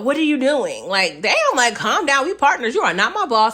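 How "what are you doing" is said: self-important, bossy little authority voice. Retelling how his partner questioned him, in a mock bossy authority voice. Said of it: "he's had this like little authority like voice".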